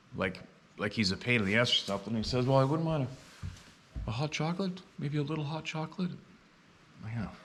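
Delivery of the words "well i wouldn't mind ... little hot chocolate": high, timid voice. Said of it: "all timid".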